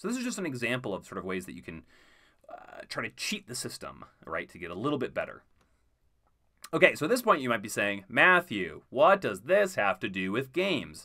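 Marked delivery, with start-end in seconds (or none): 8.1-11.1 slow, clumsy, badly done put-on voice. Voicing a listener's imagined question: bad impression of a listener. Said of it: "Sorry for that bad impression of you".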